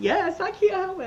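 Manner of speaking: moved, emotional voice, very high pitch. Talking about someone who just passed his state board, getting emotional. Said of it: "I'm getting emotional".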